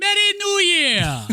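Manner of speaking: very high, loud, belted comic voice. Greeting the other host for the new year: Eddie Murphy impression. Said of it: "my best Eddie Murphy impression".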